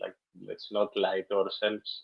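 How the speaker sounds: ordinary talk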